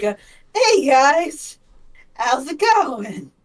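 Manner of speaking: laughing nervously. Voicing a character raising his hands to a group, laughing nervously. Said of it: "and nervously laugh like".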